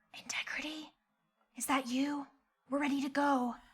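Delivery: soft, hushed whisper under the breath. In a role-play, calling to integrity hiding behind a flower, whispering. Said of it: "I'm going to whisper".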